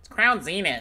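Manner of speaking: high-pitched nasal voice. Opening card packs on stream, the speaker mocks a pronunciation in a high-pitched nasal voice. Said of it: "high pitched nasal voice".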